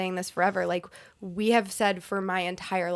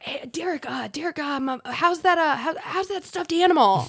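imitated raspy, hoarse voice, pitched higher; 8 semitones higher, 4 dB louder than usual. Retelling a guy who had lost his voice greeting them; imitating a raspy lost voice. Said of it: "got this really raspy sounding voice because he had lost his voice".

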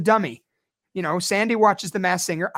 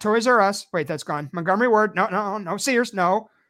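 ordinary delivery

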